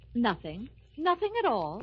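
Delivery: irritated, plainly sore, annoyed tone. Answering someone who asks what's wrong: sore, annoyed tone. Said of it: "I know that tone of voice. You're sore about something".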